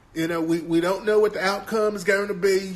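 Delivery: put-on down-home country accent. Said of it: "that country-ass accent".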